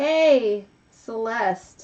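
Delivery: deliberately measured, slow and careful, word by word. Greeting someone by their new name, careful not to say the old one, said slowly. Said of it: "I have to say that slow".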